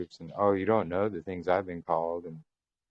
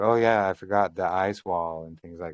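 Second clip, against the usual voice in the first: usual speaking voice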